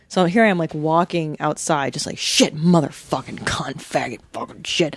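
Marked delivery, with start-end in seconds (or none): 2.1-4.9 put-on muttered cursing, lower. Retelling checking the mail full of bills: imitating own muttered cursing. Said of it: "cursing and talking to myself".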